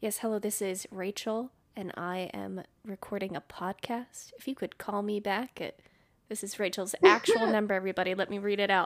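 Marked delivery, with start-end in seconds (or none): 0.0-5.6 slow, measured voicemail-style delivery. On a podcast, told she sounds like she's leaving a voicemail, she demonstrates: voicemail tone. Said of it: "that tone that you have in your voice when you're leaving a voicemail".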